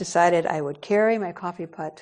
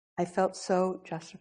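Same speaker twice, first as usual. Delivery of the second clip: normal talking voice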